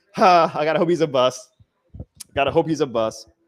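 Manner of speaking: ordinary delivery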